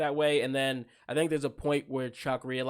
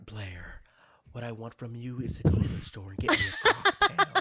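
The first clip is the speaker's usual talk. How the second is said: throaty voice placed at the back of the throat. Answering a request to impersonate Chuck Bass: Chuck Bass impression. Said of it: "So he does this, like, he's like".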